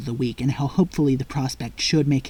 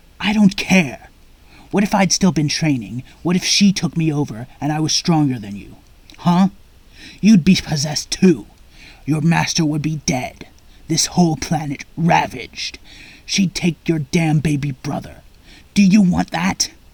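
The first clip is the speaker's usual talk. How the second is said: furious, enraged scolding rant; 3 semitones higher, 4 dB louder than usual. Vegeta scolds Gohan after the battle; enraged Vegeta voice. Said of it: ""Did you really think you could take over a Saiyan prince and get away with it?" / "Did you really think you could take over a Saiyan prince and get away with it?"".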